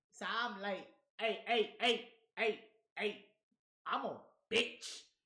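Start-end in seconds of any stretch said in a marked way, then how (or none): 1.2-5.0 slow, deep cartoon dog voice. Told to put some bass in it, the speaker says it with a little McGruff voice. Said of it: "I said it with a little McGruff in my voice".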